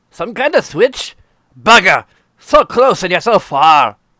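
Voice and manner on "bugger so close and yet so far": put-on loud, sort-of Scottish accent. Voicing a character reacting to a crystal-like switch; sort of Scottish accent. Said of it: "it's sort of Scottish".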